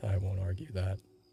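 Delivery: muttered under breath. Voicing a character who tries to seem nonchalant: muttered under his breath. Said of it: "As he goes under his breath".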